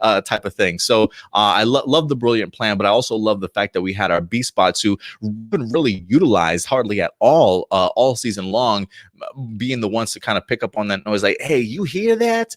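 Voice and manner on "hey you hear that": put-on New York accent, very high-pitched. Quoting a robot character hearing a noise: imitating a New York accent. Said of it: "why has he got a New York accent".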